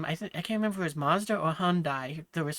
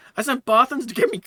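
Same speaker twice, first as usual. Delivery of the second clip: very loud, high, cracking up laughing mid-line; 7 semitones higher, 9 dB louder than usual. Reading a line aloud for the fun of it, cracking up while reading. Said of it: "I'm cracking up at it".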